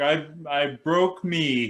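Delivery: mock very slow, drawn-out, stunned childlike cry. Retelling a childhood hand injury: imitating own childhood screaming. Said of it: "I'm screaming".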